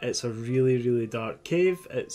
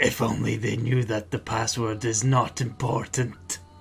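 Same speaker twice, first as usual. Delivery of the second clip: grumbling, mumbled under the breath. Voicing a character who asks for a password: muttering to himself. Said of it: "what you hear him mutter to yourself is".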